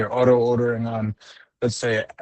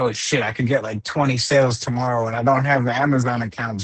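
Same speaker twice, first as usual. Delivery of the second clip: normal talking voice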